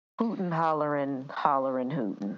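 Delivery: ordinary delivery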